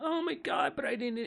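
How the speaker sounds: put-on very high, tearful little kid sobbing. Retelling how a kid reacted to swing help: imitating a crying kid. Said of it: "he starts crying like a girl".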